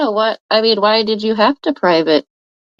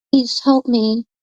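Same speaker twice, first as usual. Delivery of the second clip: super sweet, sugary, innocent little voice. Mocking how someone talks in interviews: imitating Sharon's super sweet voice. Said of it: "That's what Sharon says on these interviews".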